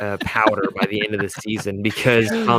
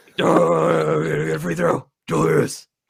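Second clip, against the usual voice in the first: raspy chain-smoker voice swinging up and down; 7 semitones higher than usual. Showing what Thibs sounds like, address Julius in a Thibs voice, like chain-smoking Batman. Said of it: "Think about Batman, but he smokes a carton a day".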